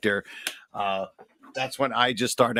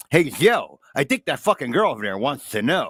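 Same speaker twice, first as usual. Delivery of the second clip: put-on male voice, higher and louder; 3 semitones higher, 5 dB louder than usual. Retelling how an old acquaintance talked: imitating Chief's way of speaking. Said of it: "He would say".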